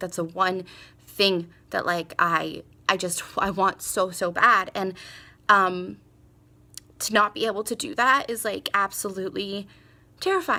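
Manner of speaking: emotional, halting voice catching and breaking up. Speaking after anesthesia about a deep fear, getting emotional. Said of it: "I'm getting emotional".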